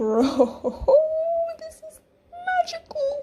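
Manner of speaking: high, loud, giddy laughing excitement. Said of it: "Sorry, I'm getting so excited".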